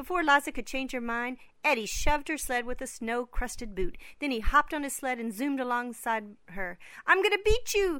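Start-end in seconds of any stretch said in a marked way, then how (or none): 7.1-8.0 very high, loud, shrieking scream. Narrator reads a sledder racing another down a hill, screaming into the rushing wind. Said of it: "Eddie screamed into the rushing wind".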